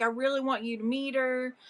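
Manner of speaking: tearful voice broken by sobs, pleading tone. Retelling a story where the woman pleads with Chukalu, imitating someone crying. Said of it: "and she's like crying".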